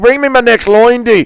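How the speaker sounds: put-on voice, pitched very high. Announced impression of Conor McGregor doing lines with Trump: Conor McGregor impression. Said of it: "impression of coked out Conor McGregor doing lines with Trump at the".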